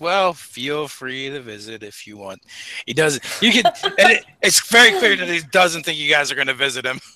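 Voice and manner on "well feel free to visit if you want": soft, slow, resigned and deflated tone. Reading aloud a character's line from a story, in a resigned voice. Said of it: "in a resigned voice".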